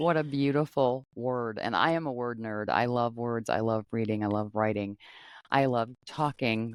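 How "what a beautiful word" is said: normal talking voice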